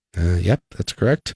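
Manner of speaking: dejected. Confirming a player's correct trivia answer, dejected. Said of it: "Why do you sound so dejected".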